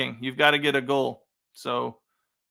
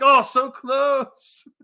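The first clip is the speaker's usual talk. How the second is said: very high, shrill, loud commentator-style scream; 11 semitones higher, 5 dB louder than usual. Retelling how Ray Hudson reacts when Barca almost score: imitating Ray Hudson screaming. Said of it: "he's screaming into the mic".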